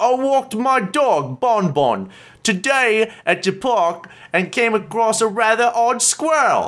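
mock British accent, slow, high. [name] reads a journal entry aloud to the others in a stereotypical British voice. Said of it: "as started [name] in a stereotypical British voice".

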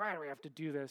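play-acted grouchy, grumbling, complaining voice. Recalling complaining about going to a staff retreat: put-on grumpy voice. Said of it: "in sort of my grumpy voice".

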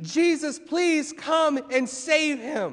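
put-on desperate begging, high and slow. In a message, acting out a man begging Jesus: acting out desperate pleading. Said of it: "See in his voice, desperate need".

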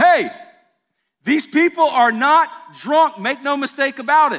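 loud, high shouting.

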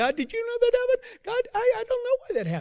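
squeaky, swooping, very high voice. Speaker mimics someone praying about an obstacle, in a Mickey Mouse voice. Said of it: "you kind of get into that Mickey Mouse voice".

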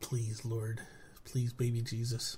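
slow, upset, exasperated, long-suffering voice. Urging the other speaker to just start the show: upset. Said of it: "Why are you so upset, [name]?".

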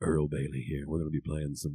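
low, silky, smooth classic-radio DJ voice. Imitating a classic radio DJ introducing himself: imitating a smooth radio DJ voice. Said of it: "his voice is amazing".

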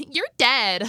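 high, loud, mock creepy little-girl voice.

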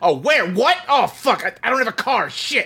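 very angry, high-pitched outburst. Retelling a scene where a character is on the phone: imitating an angry phone call. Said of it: "she's very angry".

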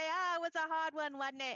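attempted Yorkshire accent, too Cockney, high and loud.

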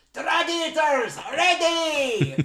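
put-on shout. Retelling how someone walks in and calls out: imitating a shout. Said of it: "he just shouts out".

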